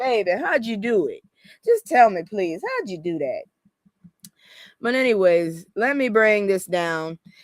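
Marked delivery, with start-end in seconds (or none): 0.0-3.4 put-on elderly Southern woman voice, swooping pitch. Asking someone how they did that, in an old Southern woman voice. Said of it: "you got me going to old Southern woman".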